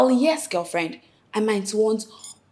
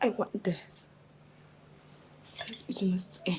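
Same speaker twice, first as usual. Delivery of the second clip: whispering through tears, hushed and tearful; 2 semitones lower, 16 dB quieter than usual. Telling a partner the relationship must end: crying while talking. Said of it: "You're crying".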